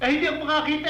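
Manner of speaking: yelling loudly.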